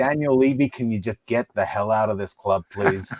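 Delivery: speaking in American accent. Voice actor asked to pick an accent and try it, American accent.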